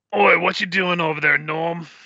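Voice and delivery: put-on gruff goblin voice. Storyteller voicing the head custodian calling out to Norm, gruff voice. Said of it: "I'm not really good at doing gruff voice, but I'll try my best".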